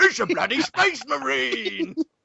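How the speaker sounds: very high-pitched, slow, drawling Cockney orc voice. Describing a game's orcs, quoting what one says: Cockney orc voice. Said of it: "all the orcs have kind of Cockney accents".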